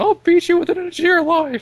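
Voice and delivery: high, loud cartoon character yell. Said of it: "Mickey's constantly yelling at him".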